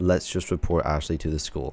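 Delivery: ordinary talk, nothing marked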